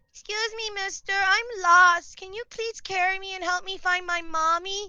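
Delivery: small, tiny, high little kitten voice. Describing their D and D character, a tiny cat, in small tiny cat voice. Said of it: "a small, tiny cat that goes".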